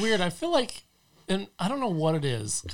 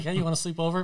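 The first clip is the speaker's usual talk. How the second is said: plain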